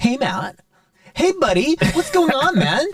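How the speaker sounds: put-on American accent, pitched very high. Describing how being around Americans changes how one talks: American accent. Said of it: "when you're around so many Americans, you start going".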